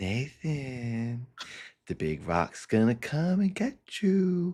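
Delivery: put-on seductive, high voice, lingering on one name. Retelling what sexy Jesus said in the forest: sexy Jesus voice. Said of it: "acting all sexy and doing a sexy voice".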